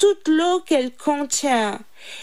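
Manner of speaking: ordinary delivery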